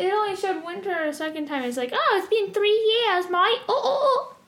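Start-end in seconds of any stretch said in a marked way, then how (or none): 1.9-4.3 overdone, bad fake English accent, pitched high. Speaker mimics how the characters in a show talk, bad English accent. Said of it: "They talk like they're from England?".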